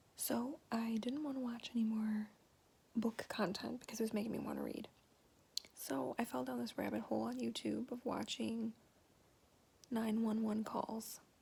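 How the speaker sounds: speaking softly. Talking quietly because the husband is sleeping: talking quietly. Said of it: "I have to talk kinda quietly".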